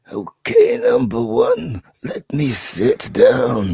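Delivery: put-on old man voice with swooping, gliding pitch. Mocking how the aged captain now sounds: imitating old Picard. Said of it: "He's like, you know".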